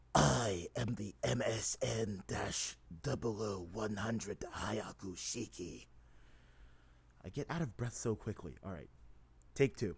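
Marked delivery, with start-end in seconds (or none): 0.1-5.8 very slow character voice, every word drawn out. Recording take one of a voice that is hard to do: Blade Wolf impression. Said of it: "an impression of Blade Wolf without any voice modulators".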